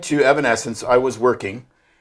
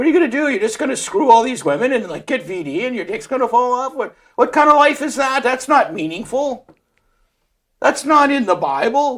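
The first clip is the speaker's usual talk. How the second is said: put-on almost Irish accent, higher pitched; 11 semitones higher than usual. Doing an impression for a co-host: Jordan Peterson impression. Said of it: "Jordan Peterson is almost an Irish accent".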